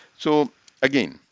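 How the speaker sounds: ordinary talk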